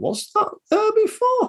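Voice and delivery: very high, slow, squeaky put-on voice.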